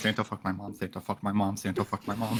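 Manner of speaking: whispering in character. Rocking in the fetal position in character: whispering in character.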